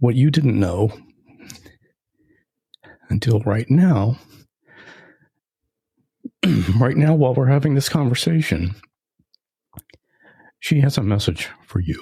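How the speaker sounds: voice thick with emotion. Podcast host telling the guest that the author has a message, choked up. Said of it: "now I'm getting choked up".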